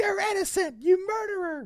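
very high-pitched, shrill screaming. Retelling how a game character reacted to shooting a ship: imitating someone screaming. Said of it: "she screams at me".

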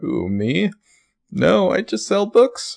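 very high, leisurely, slow, modest and gracious tone. Imitating a character's line after being asked to do his moment: imitating Ezra's voice. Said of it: "trying to mentally recall my Ezra voice".

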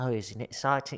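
put-on English-accented voice. Telling someone what you watched, quote David Beckham in a David Beckham impression. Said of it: "he sounds like this".

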